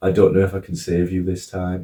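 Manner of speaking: plain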